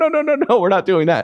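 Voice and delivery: alarmed tone.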